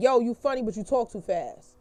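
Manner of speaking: ordinary delivery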